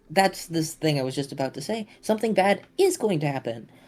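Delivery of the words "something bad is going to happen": overly merry, too cheerful, high, sing-song voice. Telling the group what will happen next, with too much merriment. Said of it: "I said that with too much merriment in my voice".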